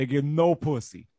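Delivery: put-on tossed-off, laid-on New Jersey accent. Retelling a phrase said with a coworker about customers: new jersey accent. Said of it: "your New Jersey accent with it".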